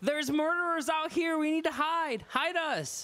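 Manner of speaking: high, frantic, desperate holler. Role-playing a character calling through to a lady, hollering for help. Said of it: "I want to holler through".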